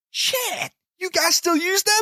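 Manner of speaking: very shrill, loud, booming, high put-on American accent. Retelling an American's reaction in a story, in a put-on American accent. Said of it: "that's me American accent".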